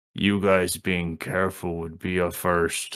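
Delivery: very deep, soft, understated voice. Speaking up for the first time from Dustin's direction, in Bruce's very deep voice. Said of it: "you hear this very deep voice".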